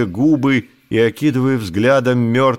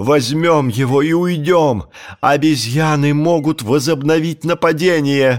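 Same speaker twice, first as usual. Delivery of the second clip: ordinary delivery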